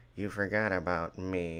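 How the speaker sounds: sly snake-like put-on voice. Imitating a character who complains of being forgotten: sly snake-like Crosshair voice. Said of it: "sly and snake-like".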